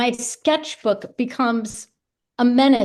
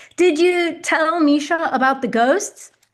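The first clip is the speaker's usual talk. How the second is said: put-on yelling, pitched higher; 4 semitones higher than usual. Speaker voices her husband calling from the other room; imitating David yelling. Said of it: "my husband David yelling from the other room".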